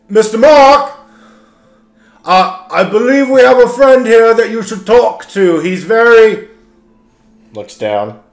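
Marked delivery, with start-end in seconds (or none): 0.2-6.5 high, raised, shouted yell. Player character calling out to another character, yelling. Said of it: "can I yell at Mark?".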